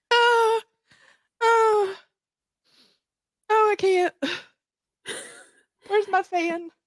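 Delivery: breathless from laughing. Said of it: "Deep breath".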